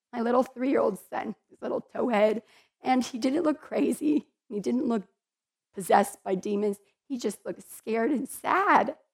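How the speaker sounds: choked-up speech, words breaking with crying. Recounting a dream about their three-year-old son, crying while speaking. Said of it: "See, I'm crying".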